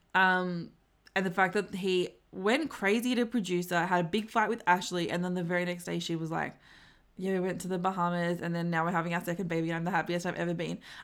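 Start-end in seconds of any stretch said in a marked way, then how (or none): 7.2-10.8 fast, straight-faced gushing, rattled off. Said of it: "she said all that with a straight face".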